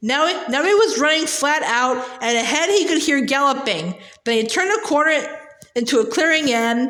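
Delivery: plain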